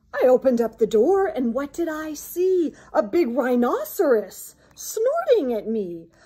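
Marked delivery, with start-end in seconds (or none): none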